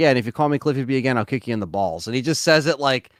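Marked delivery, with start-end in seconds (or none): 0.0-2.1 play-acted easy, unbothered, offhand, nonchalant tone. Retelling a reply given to an interviewer on a DVD: imitating a nonchalant threat. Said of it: "so nonchalantly".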